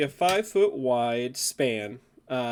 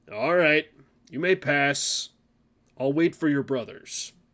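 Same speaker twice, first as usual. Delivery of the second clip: rough, gruff storybook bridge troll voice. Narrator reads the troll answering from beneath the bridge: deep gruff troll voice. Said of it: "In a deep, gruff voice from beneath the bridge answers".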